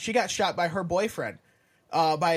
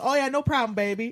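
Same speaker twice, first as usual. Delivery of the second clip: sweet, kindly, pitched-up Southern lady voice; 5 semitones higher than usual. Talking about life in the South, imitating a sweet Southern lady.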